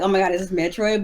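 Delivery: ordinary talk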